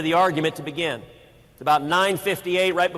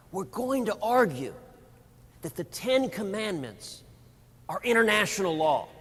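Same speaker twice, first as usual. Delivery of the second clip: hushed, quiet half-whispered voice; 2 semitones higher, 5 dB quieter than usual. Retelling what someone told him and the Attorney General before the argument, in a half-whisper. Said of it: "said in a whisper".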